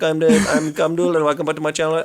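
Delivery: mock Indian English accent. Imitating a tutorial guy from india who opens his video: imitating a tutorial guy from india. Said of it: "some dude in India who'll just be like".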